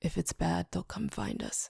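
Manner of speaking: groggy, creaky, drowsy, just-woken voice. Reading a scene where someone just woke in the dark: groggy voice. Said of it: "says in a groggy voice".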